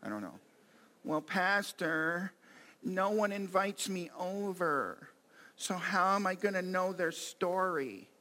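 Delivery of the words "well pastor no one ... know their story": very slow, drawn-out put-on whine. Playing a churchgoer answering the pastor in a sketch, in a whiny voice. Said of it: "I haven't done my whiny voice in a long time".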